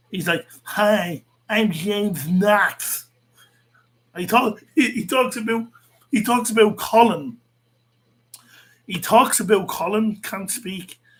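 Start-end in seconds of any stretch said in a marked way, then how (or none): 0.7-3.1 put-on mocking lisp, much slower. Mocking a man he says talks with a lisp: mocking lisp impression of James Knox. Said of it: "He talks with a lisp".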